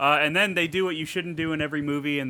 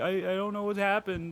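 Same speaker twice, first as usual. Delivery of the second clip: mock tearful crying, higher pitch; 5 semitones higher, 4 dB quieter than usual. Retelling a film scene where a character speaks while crying: imitating someone crying.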